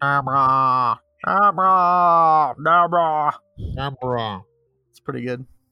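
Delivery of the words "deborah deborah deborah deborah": loud, nasal voice squeezed through a pinched nose. Asked for a Ray impression, show the easiest way: Ray impression, like holding your nose. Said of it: "like hold your nose".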